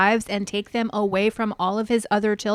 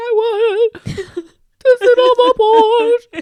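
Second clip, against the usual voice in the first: acted, very high, very loud, very slow sobbing wail; 13 semitones higher, 8 dB louder than usual. Retelling a wife sitting alone on a bench: imitating Robin crying. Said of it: "She's crying and she's like".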